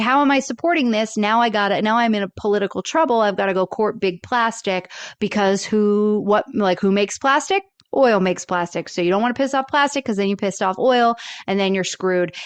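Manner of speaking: usual speaking voice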